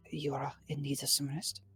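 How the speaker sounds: whispering in character. Voicing a character who leans close at a door: whispering in character. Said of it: "and kind of whispers".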